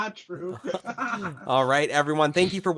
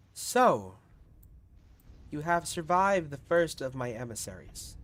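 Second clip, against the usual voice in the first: put-on echoing voice; 3 semitones lower, 6 dB quieter than usual. Voicing Aural, whose voice echoes through the city: Aural's echoing voice. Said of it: "you all hear Aural's voice echo".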